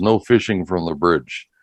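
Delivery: plain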